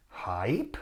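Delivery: "hype" rising in a puzzled question tune. Recalling their immediate response to a listener question, rising question pitch on hype. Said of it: "Like that, like with, with intonation on the end".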